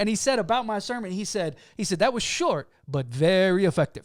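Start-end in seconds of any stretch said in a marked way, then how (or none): 2.0-3.9 best attempt at a put-on Jamaican accent. Quoting what a man said about the speaker's sermon, Jamaican accent. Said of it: "that's my best Jamaican accent there".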